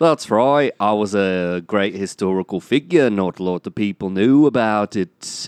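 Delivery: put-on Liverpool accent. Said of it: "Oh, that's [name]".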